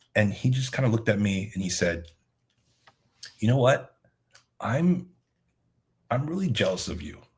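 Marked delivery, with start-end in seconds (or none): 3.4-7.1 acted-out heavy, serious, somber tone. Retelling what a man said while they were catching up: imitating a somber tone. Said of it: "he got really, really kind of somber".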